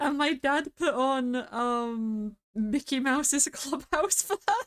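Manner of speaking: high, talking through laughter, drawn-out um. Explaining why a line made them laugh, laughing while talking. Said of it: "I'm laughing at that".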